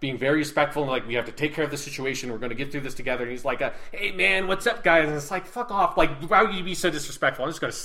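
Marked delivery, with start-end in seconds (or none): 3.9-5.1 rude, loud, drawn-out, thuggish delivery. Retelling someone's disrespectful greeting to a respectful group: imitating a rude thug. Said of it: "talking like this like thug".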